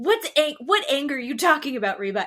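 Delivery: mock angry screaming. Retelling a man denying his anger on a show: imitating someone screaming angrily. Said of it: "As he's screaming and yelling at her".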